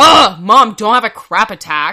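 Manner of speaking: put-on very loud, sassy, angry teen attitude. Acting out their teenage self talking to their mom, mock-angry teen attitude. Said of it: "angry and I was like".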